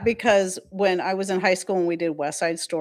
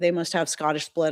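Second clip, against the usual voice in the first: normal talking voice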